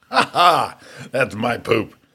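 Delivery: put-on laughter. Telling a story about her complaining of the smell, the speaker retells laughing. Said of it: "and I'm laughing like".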